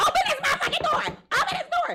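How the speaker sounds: very high, loud, shrill, furious pounding yell. Recounting banging on her boyfriend's door, retelling a livid shout. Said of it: "I'm livid at this point".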